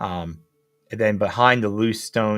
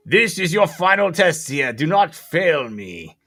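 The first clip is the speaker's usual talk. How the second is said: big booming statue voice, pitched up; 8 semitones higher, 4 dB louder than usual. Describing a game scene, the speaker voices a statue replying: booming statue voice. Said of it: "a booming voice from the statue replies".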